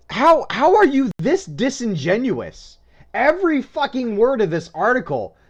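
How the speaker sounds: seething, incredulous, furious, high-pitched rant. Ranting about an article to a co-host: angry ranting. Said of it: "I am sobering because I am so angry".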